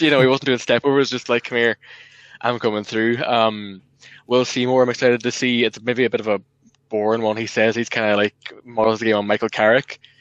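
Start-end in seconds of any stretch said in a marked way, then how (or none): none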